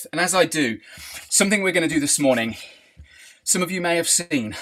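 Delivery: soft, breathless voice, gasping for air between words. Addressing the morning crowd about planned games while catching breath, out of breath. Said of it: "I'm out of breath".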